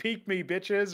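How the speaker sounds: put-on, high-pitched screaming. Retelling a player yelling at the opposing team: imitating Smooya screaming. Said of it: "he was screaming at M I B R".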